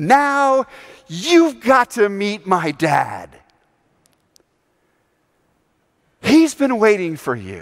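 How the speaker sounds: mock overjoyed, eager voice. Narrating Jesus stepping back from an embrace to speak, Jesus, joyful and eager. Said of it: "he says with such joy and anticipation".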